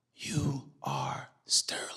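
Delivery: gentle, soft, hushed whisper. Retelling the moment he first met screaming sterling: retelling a whisper. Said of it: "And I just whisper".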